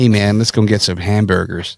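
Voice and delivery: put-on American accent. Trying an American accent on a simple everyday line: put-on American accent. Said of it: "when you try to do an American accent".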